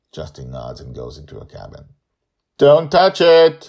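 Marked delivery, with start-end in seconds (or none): 2.5-3.5 very loud, very high, shrill yell. Reading a story aloud, a character warns someone off: yelling. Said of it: "Joe yells".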